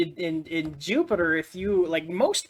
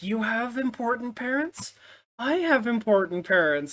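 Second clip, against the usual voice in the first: mock, high, timid, cowering scared-puppy voice; 6 semitones higher than usual. Imitating a character who sounds like a scared puppy about his parents: imitating a scared puppy. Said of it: "sort of like a scared puppy".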